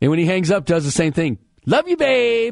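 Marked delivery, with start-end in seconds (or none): 1.6-2.5 very high-pitched, sappy, goofy, lovestruck voice. Act out how he hangs up after she calls, imitating a man's in-love voice. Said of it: "In that voice".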